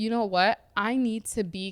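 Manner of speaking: ordinary talk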